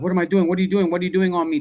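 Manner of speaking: mock, frantic, rapid-fire freaking-out outburst. Describing a girl in a trance briefly snapping out of it, imitating someone flipping out. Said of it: "Like she'll flip out".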